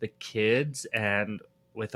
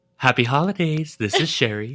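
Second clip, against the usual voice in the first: put-on raised, elderly grandmother voice; 4 semitones higher, 5 dB louder than usual. Showing how a grandmother answered the phone: imitating Grandma Sherry. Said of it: "show them what Grandma Sherry would do".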